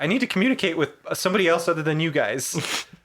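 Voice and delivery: ordinary talk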